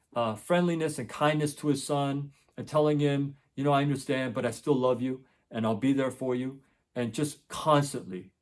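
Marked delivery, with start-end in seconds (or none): none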